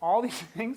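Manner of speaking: laughing through the words. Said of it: "I'm sorry, I'm laughing".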